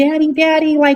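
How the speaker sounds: put-on grown woman's high, loud babyish voice.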